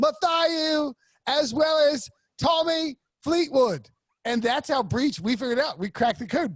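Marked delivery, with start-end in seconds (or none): 0.0-3.9 put-on South African accent, higher pitch. Imitating a TV host welcoming guests and announcing names: Trevor Noah impression. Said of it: "Trevor Noah is doing the day show. He's like".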